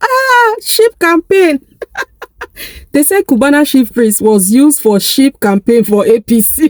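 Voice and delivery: words broken up by laughter throughout. Reporting a breaking news story while laughing: laughing while talking. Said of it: "just give me a few seconds to laugh".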